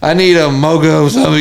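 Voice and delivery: grumpy, irritated, fed-up, mad tone. Retelling dad ordering mom's drink at the drive-through: imitating an irritated order. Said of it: "just so irritated".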